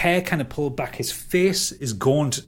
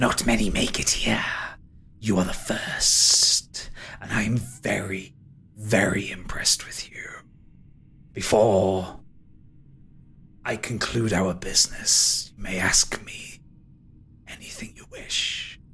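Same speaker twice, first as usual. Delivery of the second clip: very slow, drawn-out, deep ghostly spectre voice; 5 semitones lower than usual. Game narrator speaking as a spectre that takes form in the room, spectre voice. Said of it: "is a spectre. He is... He takes form in the centre of the room as the top half of a man".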